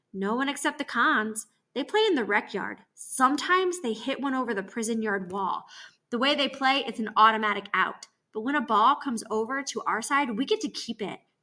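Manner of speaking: ordinary delivery, nothing marked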